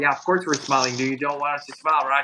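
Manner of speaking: put-on aggressive girl voice. Retelling a girl's reply at a bakery: imitating an aggressive girl. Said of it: "kind of aggressive almost".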